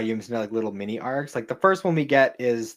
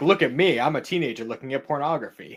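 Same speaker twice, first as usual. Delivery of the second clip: mocking, exaggerated, showy, over-the-top show-off manner; 3 semitones higher than usual. Mocking a character who makes a huge show of reading: imitating an exaggerated showy manner. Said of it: "making a huge show of being like".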